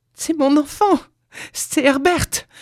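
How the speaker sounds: very high-pitched outcry, struggling. Narrator reads a wife struggling against her husband's grip: crying out, struggling. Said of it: "s'écria-t-elle en se débattant".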